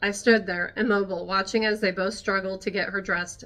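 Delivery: ordinary delivery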